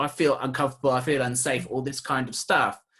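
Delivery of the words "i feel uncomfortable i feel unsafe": ordinary talk, nothing marked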